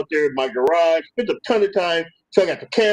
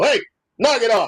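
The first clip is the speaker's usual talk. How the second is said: firm, stern scolding dad voice, pitched up; 6 semitones higher than usual. Retelling checking on the kid over the cameras: stern dad voice. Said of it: "put the dad voice on".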